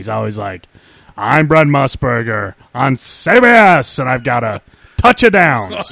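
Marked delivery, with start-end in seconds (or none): 1.2-5.9 showy carnival-barker announcer voice. Mocking a man's weird voice with a Brent Musburger impression. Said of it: "he's got that weird voice, too. He thinks he's got to, like, sell it at a carnival".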